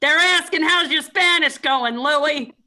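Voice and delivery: loud, slow, drawn-out yell. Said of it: "[name]'s yelling at Louie in the background".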